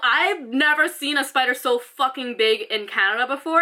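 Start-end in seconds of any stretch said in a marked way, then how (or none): none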